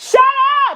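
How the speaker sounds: very loud, high-pitched, shrill yelling. Breaking off from talking to yell at the kids: yelling at kids. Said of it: "Let me yell at my kids".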